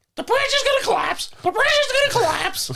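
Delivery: squawking parrot voice, very high. Voicing the Mothman warning people off the bridge, in a parrot voice. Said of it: "He's not a parrot".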